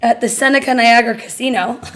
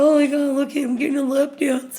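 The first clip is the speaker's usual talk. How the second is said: put-on stoner-girl voice, higher; 2 semitones higher, 4 dB quieter than usual. Recalling younger days with friends, acting out what they'd say in a stoner girl voice. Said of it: "you sound like".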